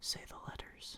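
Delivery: very quiet, faint, hushed whisper. Narrating a game, the speaker voices doors speaking to a player: very quiet voice. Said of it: "the doors very quietly say".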